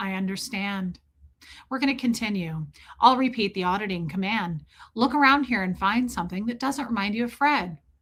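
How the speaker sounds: put-on lifeless, emotionless flat monotone. Recounting grieving in front of an auditor, she imitates his lifeless flat voice. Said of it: "Dead behind the eyes".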